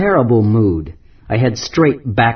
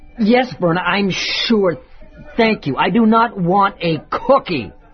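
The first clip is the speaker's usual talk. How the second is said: voice raised and pitched up in irritation; 9 semitones higher than usual. Answering Verna's cookie question a second time, raised voice. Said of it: "there's no need to raise your voice".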